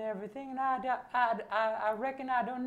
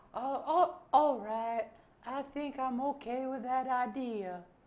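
put-on Southern girl voice. In a puppet sketch, the girl puppet agrees to an idea, southern Rogue voice. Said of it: "I like how your girl puppet is southern".

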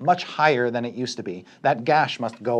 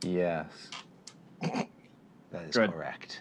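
disappointed, breathy, let-down, half-whispered voice; 7 semitones lower, 12 dB quieter than usual. Confirming a damage rule to a player: disappointed tone.

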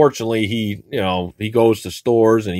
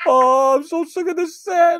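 very high, whimpering fake crying. Trying again on camera, the host complains about the set: mock crying. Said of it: "Don't cry".

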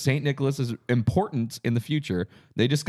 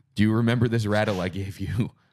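ordinary talk, nothing marked

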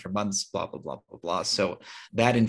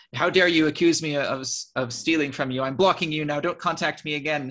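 put-on scream, higher; 7 semitones higher, 3 dB louder than usual. Retelling a person's public reply to an accusation: imitating someone screaming. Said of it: "she, he was, like, screaming".

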